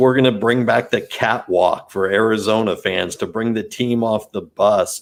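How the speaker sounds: ordinary delivery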